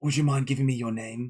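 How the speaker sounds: quick, hushed whisper. Narrator voices a character asking the player for a name, whispering. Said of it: "he whispers".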